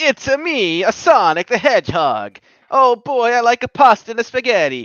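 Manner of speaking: very high, very loud, belted Italian accent. Asked to talk with an Italian accent, the speaker answers in an Italian accent like Mario. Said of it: "can you talk with an Italian accent like Mario?".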